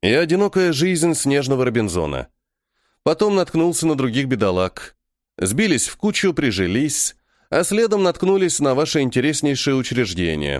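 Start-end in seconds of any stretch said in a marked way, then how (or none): none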